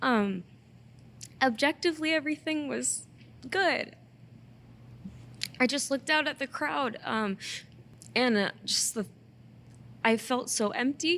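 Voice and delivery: tearful voice, speaking through tears. Speaker talking about a recent show, unexpectedly crying. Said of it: "I don't even know why I'm crying right now".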